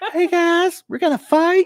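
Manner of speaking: shrill, very high, squeaky, loud soprano boxer voice. Speaker imagines how someone could have talked: Mike Tyson impression. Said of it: "Mike Tyson".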